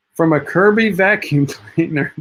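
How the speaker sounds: amused, chuckling through the words.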